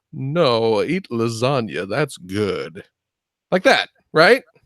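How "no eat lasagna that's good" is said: very deep, very slow cartoon cat voice, every word dragged. Acting out a scene where Garfield meets Alf: Garfield voice. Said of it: "Garfield shows up".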